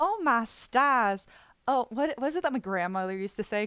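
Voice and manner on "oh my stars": genteel Southern belle accent. Warming up by trying southern exclamations, in a southern belle accent. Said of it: "Southern Southern Belle accent".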